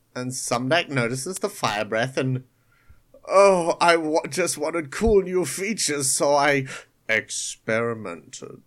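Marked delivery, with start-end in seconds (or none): 3.2-8.4 low, deep, mechanical robotic villain voice. Retelling a cartoon episode, the speaker quotes Sumdak in a Megatron voice. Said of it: "You have a very good Megatron voice".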